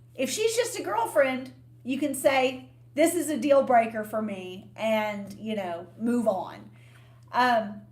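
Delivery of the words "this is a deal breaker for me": ordinary talk, nothing marked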